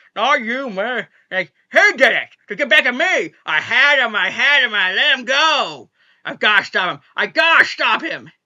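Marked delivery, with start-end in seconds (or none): 0.1-1.0 theatrical, hammy, overacted cry, milking every word. Recapping a scene where Mel goes into a monologue, hammy Mel impression. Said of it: "the way he's just kind of hamming up".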